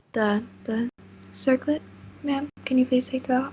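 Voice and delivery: gently spoken, soft, quiet, courteous delivery. Game master voicing a character addressing Nora, soft-spoken. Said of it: "you hear a soft-spoken voice".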